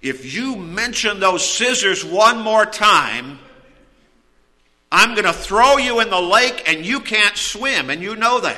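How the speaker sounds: play-acted exasperated, fed-up tone. Retelling a man's words to a woman during an argument, mock-exasperated. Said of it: "exasperated, he said".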